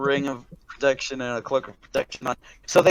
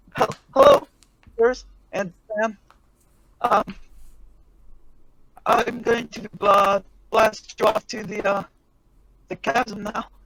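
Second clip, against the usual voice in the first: nervous voice, much higher pitch; 7 semitones higher than usual. The narrator voices Angus in the hangar, about to launch the group, nervous Angus voice. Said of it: "he's looking like really nervous".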